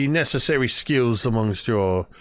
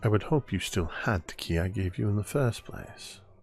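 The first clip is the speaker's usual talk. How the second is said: murmured, hushed and quiet, just as low; 2 semitones lower, 7 dB quieter than usual. Playing a character who answers a whispered tease: low quiet voice. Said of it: "just as low".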